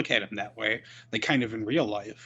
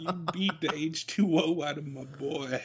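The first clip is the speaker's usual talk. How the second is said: put-on mumbly southern voice, higher pitch; 5 semitones higher than usual. Imagining the wrestling manager's promo in a silly voice: Bobby Boucher voice. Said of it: "Funny you actually did that voice".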